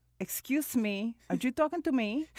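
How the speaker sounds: put-on faint, slight touch of Cuban accent. Describing how their accent creeps in gradually, the speaker puts on a slight accent. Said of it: "I get a little bit of an accent".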